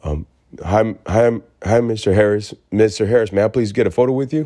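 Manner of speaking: put-on play-acted shy little-kid voice. Retelling walking up to ask for a photo: imitating own shy self. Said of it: "and I was shy as hell".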